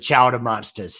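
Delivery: terrible fake New England accent. Announcing a team's new name, terrible new england accent. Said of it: "Forgive my terrible New England accent".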